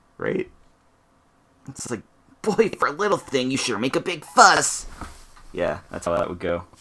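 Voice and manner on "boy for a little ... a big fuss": high, loud, tiny sprite bug voice. Voicing a little sprite bug speaking to Amaterasu: voicing a little sprite bug. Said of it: "the little sprite bug thing saying that to Amaterasu".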